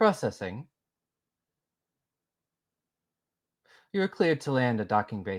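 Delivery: very robotic, mechanical computer-like voice. Retelling what a voice said back to him, in a very robotic voice. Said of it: "You get a very robotic voice back being like".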